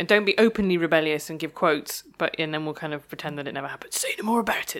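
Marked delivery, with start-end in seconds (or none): 3.9-4.8 hushed, spoken on the breath. Speaker shows off their impression of a public figure: Jeremy Corbyn impression. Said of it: "That's my impression of Jeremy Corbyn".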